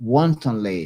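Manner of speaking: wantonly stressed with a firm fall.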